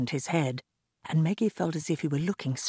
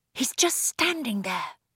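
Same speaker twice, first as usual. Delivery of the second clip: whispering, much higher pitch; 8 semitones higher than usual. A girl leads a man into her room: whispering. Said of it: "whispered Maggie".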